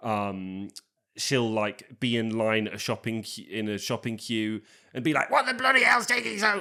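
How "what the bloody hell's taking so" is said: mock furious, very high-pitched, shrill, rushed shout. Describing a movie character who shouts at everyone, the speaker imitates her angry shouting. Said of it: "is her shouting".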